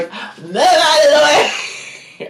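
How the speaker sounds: put-on high, loud, drunk laughing yell. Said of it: "Donovan's yelling".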